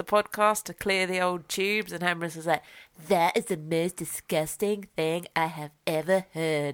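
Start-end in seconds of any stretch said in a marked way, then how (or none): 3.1-6.7 cartoon character voice. Retelling what someone said about a sniff: Cartman voice. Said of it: "he actually sounded just like that".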